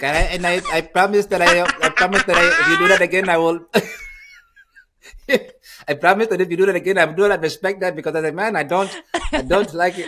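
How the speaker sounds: stern, high-pitched and loud. Show how his high voice undercuts a stern threat, imitating Giannis's high, stern voice. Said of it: "his voice is so high".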